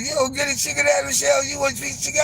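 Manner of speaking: high-pitched, fast delivery. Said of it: "they said".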